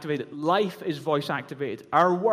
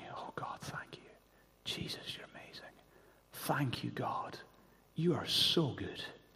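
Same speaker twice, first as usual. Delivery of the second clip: barely-there, faint murmured whisper under the breath; 3 semitones lower, 13 dB quieter than usual. Retelling mum's last words as she drifted in and out of sleep: imitating a whisper. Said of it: "you could just hear her whispering".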